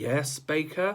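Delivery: bored, uninterested tone. A teacher calls on a pupil waving her arm in class: bored voice. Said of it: "in a bored voice".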